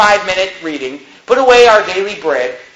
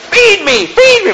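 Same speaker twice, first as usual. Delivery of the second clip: very high, shrill screaming infant cry; 12 semitones higher, 3 dB louder than usual. Acting out a baby screaming to be fed: imitating a shrieking baby. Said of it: "The baby says, shrieking, screaming".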